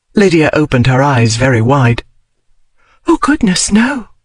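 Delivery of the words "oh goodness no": breathless, very high, out of breath. Reading a scene where a heroine answers a duke: breathless. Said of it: "she said breathlessly".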